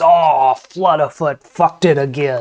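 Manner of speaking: put-on goblin character voice. Voicing a goblin who has just dropped his juggling balls: voicing Flutterfoot the goblin. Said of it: "and he says".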